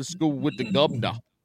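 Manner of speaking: put-on British accent. Suggesting a bit for sound bites, a podcaster turns British for a second: British accent. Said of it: "Just turn British for a second".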